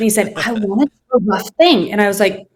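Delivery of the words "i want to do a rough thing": put-on Turkish accent in English. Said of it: "in his Tinglish, as we call it, Turkish English".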